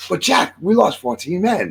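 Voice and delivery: clumsy fake English accent. Retelling a story's dialogue, in a bad English accent. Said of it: "I'm going to do an English accent. I suck at it".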